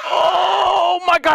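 frightened screaming.

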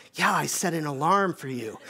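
put-on whispered assistant voice. Retelling how the alarm clock answers late at night: imitating Alexa whispering. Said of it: "she'll whisper back".

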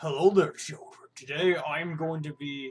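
put-on robot leader voice. Speaker announces he'll be Optimus Prime, then speaks as him: Optimus Prime voice. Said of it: "I'll just be a big boy Optimus Prime".

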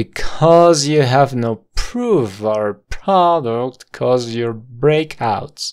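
very slow, every word linked into the next. Language drill repeating an English line, said very slow, words joined. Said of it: "Todo junto y muy lento".

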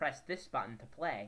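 ordinary delivery

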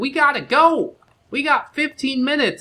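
put-on, very high-pitched, shrill yell. Retelling how a wife hurries him to leave: imitating wife yelling. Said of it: "My wife yells at me and she's like".

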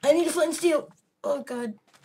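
high, rushed, frantic panicked blurt. Streamer in a game with an opponent right behind them, panicking. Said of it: "I can't think of the word right now because I'm just panicking".

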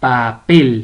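papel with last syllable pel stressed. Spanish lesson on stressed syllables without written accents; stress on pel in papel. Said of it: "Tiene la mayor fuerza de voz en pel, en la última sílaba".

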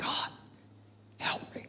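very quiet, hushed, pleading whisper. Acting out a hurting person who can only whisper: acting out a whispered prayer. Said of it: "but I can whisper".

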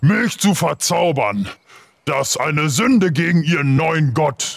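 enraged giant character voice. Game master voicing a six-meter giant who is angry at a player; angry giant voice. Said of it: "wo ein 6 Meter großer, gut gebauter Riese euch anstarrt und sauer auf dich ist".

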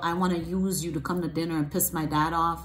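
usual speaking voice

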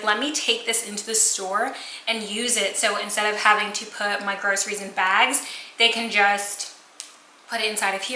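ordinary talk

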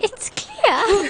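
very high fibbing voice with little inflection. Showing the others how the game master sounds when lying: Carla's lying voice. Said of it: "This is Carla's lying voice".

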